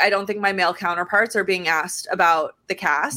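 ordinary talk

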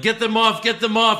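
frantic, high, loud yelling, losing control. Retelling how a wrestler freaked out in the ring: imitating someone yelling.

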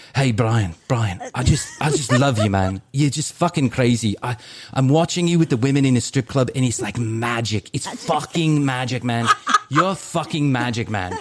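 bad put-on British accent, horribly done. Quoting a british man a friend brought along, horrible british accent. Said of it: "I'm going to do a horrible British accent".

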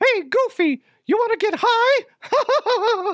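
deliberately bad, slow, high-pitched squeak. Imagining the comic as a cartoon, Mickey speaks to Goofy, bad Mickey Mouse voice. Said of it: "I am not good at Mickey Mouse".

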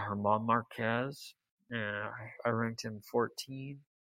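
whispering very low. Admitting the first player they ranked wrong: whispering really low. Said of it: "I'm gonna whisper just really low".

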